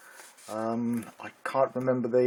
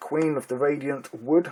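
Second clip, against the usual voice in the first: ordinary talk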